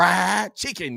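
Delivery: high, creaky voice. Retelling an interview answer about favorite food, imitating Jerry Jeudy. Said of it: "he said it like that".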